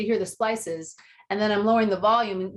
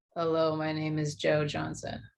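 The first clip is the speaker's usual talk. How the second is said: utterly unexcited, dragging, low, flat, bored monotone; 5 semitones lower, 6 dB quieter than usual. Retelling an interview guest's answer: imitating a bored, unexcited reply. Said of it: "please don't sound so excited to be here".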